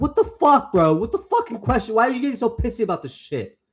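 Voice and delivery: irate, loud, very high-pitched angry outburst. Reacting to a question in a group conversation, angry. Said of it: "I don't know why I'm so angry".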